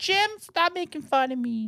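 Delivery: put-on very high, slow, little child's voice. Imitating the other speaker's kid complaining about the teasing: imitating the other speaker's kid. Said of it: "And he sounds just like that".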